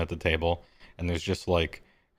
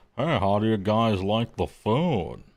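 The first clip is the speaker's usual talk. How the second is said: nervous put-on character voice; 4 semitones higher than usual. Voicing a nervous cook bringing the check: Mister Plinkett voice. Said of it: "he talks like Mister Plinkett".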